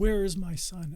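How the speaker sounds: put-on high, loud screaming. Retelling arriving at a crash scene: retelling own screaming. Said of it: "And I just kept screaming".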